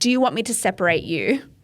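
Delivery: put-on voice speaking loudly. Retelling a flight attendant's offer to the couple: imitating someone speaking loudly. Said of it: "really loudly for everyone to hear".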